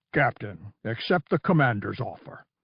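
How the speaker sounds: cutting, biting, exact, deliberate, precise delivery. Reading a story, a new voice cuts into the exchange; biting precision. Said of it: "words spoken with biting precision".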